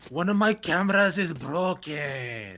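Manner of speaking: put-on Middle Eastern accent, drawn-out, broken speech. Showing how an impression is done, for others to rate, in a Cypher voice, bit of a Middle Eastern accent. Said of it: "you have to pull out a bit of a Middle Eastern accent".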